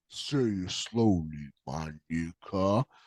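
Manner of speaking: low, soft, slow drawn-out delivery.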